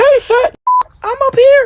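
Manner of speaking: put-on tiny baby chipmunk voice, very high, loud squeak. Retelling a voice overheard while walking away, in a little baby chipmunk voice. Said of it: "a little baby chipmunk voice go".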